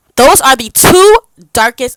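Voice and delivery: full-on, very loud, high-pitched yelling. Speaker ranting about the two darkest shades in a foundation range, yelling. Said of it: "I'm yelling".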